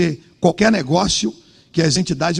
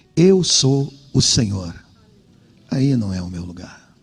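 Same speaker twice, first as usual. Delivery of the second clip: put-on gentle, sweet, loving voice, lower; 7 semitones lower than usual. Retelling what a voice said at night: imitating a sweet, loving voice. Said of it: "eu vi a mesma voz".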